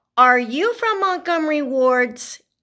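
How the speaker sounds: put-on high-pitched yell, calling out. Quoting her eight-year-old questioning the delivery man: retelling a yell through a door. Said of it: "I yelled through the door".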